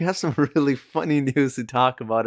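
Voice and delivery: talking through laughter. Opening with funny news, laughing while talking. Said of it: "I'm sorry I'm laughing here".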